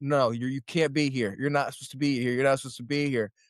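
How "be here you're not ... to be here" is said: ordinary talk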